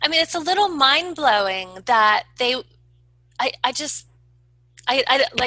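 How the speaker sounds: stuttering, stammering, stumbling restarts, lost for words. Telling a listener how mind blowing this is, at a loss for words, stuttering. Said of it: "clearly I'm stuttering".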